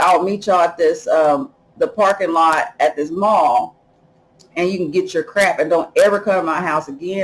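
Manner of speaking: plain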